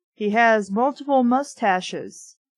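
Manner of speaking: normal talking voice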